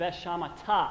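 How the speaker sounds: veshamata with stress landing on the final syllable -ta.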